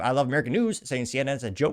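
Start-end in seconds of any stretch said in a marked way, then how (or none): none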